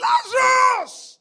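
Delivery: crying out with a high, loud, drawn-out voice. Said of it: "He says".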